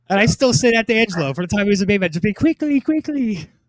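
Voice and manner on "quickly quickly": quick, pitched-up, put-on Indian accent. Speaker recalls echoing a man's fake Indian accent back at him. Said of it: "like this like fake, like I guess Indian accent".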